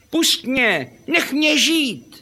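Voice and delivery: squeaky, very high talking fish voice, lisped sibilants. Reading a tale, a hooked fish calls to the fisherman: slightly lisping fish voice. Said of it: "poněkud šišlá".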